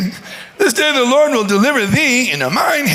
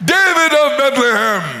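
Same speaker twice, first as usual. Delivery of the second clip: mock boxing ring announcer voice. Joking about a fight with no announcer: imitating a boxing ring announcer. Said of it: "there's no announcer".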